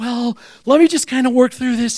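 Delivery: ordinary delivery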